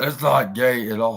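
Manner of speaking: reassuring, dismissive tone in a borrowed voice. Reading a quote aloud and imitating the speaker: imitating Vince's voice. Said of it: "imitating Vince's voice".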